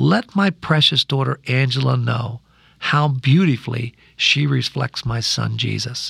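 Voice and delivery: still, slow, unhurried inner voice. Speaker retelling a voice she heard on a plane, still, quiet voice. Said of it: "the still, quiet voice".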